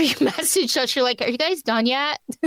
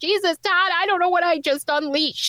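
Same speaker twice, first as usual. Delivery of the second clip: scared, high, tearful crying plea; 5 semitones higher than usual. Retelling a frightened phone call to Todd: retelling own crying.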